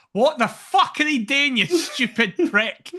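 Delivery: enraged, furious, high-pitched shouting. Retelling watching the header on the couch: retelling own angry shout. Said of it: "I shouted".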